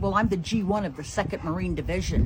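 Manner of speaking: ordinary talk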